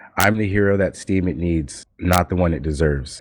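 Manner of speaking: usual speaking voice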